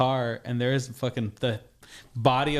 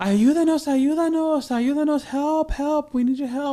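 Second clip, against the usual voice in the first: mock shrill, very high, loud screaming cries; 5 dB louder than usual. Retelling restaurant workers running out to him in a parking lot, imitating screaming for help. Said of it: "they start screaming for help".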